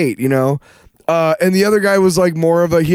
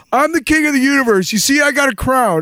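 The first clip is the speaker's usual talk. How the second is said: half-yelled, high-pitched, called-out delivery; 5 semitones higher than usual. Retelling what someone at a show was yelling: imitating someone yelling. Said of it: "I could hear him yelling".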